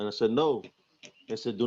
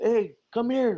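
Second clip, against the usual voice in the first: mock, very high, carrying yell; 11 semitones higher, 4 dB louder than usual. Recounting a woman calling out toward a tree, retelling a yell. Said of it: "And she's yelling".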